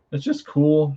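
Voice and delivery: cracking, breaking voice, jumping up high. Showing off a book that came in the mail, voice cracking. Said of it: "sorry, voice crack".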